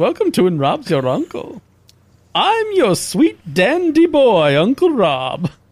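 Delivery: playful, fun put-on character voice. Speaking to the others, the speaker switches into a fun put-on voice. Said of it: "This is a fun voice".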